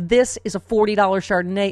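ordinary talk

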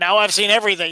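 ordinary delivery

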